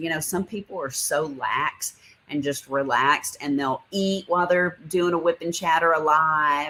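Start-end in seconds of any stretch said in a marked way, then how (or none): none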